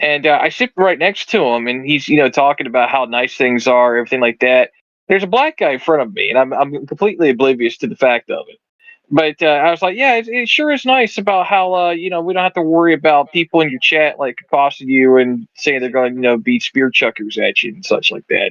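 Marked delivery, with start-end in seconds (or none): none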